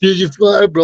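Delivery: high-pitched, jeering, mocking tone. Retelling how a guy behind the speaker mocked him, imitating a mocking taunt. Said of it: "Like starts mocking me".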